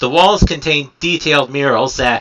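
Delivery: ordinary delivery, nothing marked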